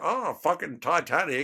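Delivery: put-on irritated, ranting tone. Imitating the other speaker complaining at them: imitating someone getting shitty. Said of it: "You get shitty at me going".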